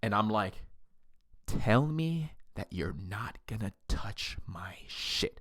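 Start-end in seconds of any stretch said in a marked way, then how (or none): 1.5-5.4 slow, drawn-out whisper, close in. Retelling a fight, quoting own words in a whisper. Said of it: "I said it just like that, in that, like, whisper".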